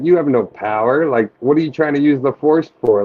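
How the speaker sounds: ordinary delivery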